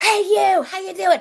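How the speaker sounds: mock very high, loud shouted call. Retelling calling out to a guy across the room: imitating own past shout. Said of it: "I'm shouting from the other side of the room".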